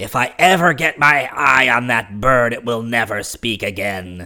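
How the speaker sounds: enraged, furious outburst in a creature voice. A narrator reads a creature's line in a story, in a voice of fury. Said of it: "exclaimed the creature in a voice of fury".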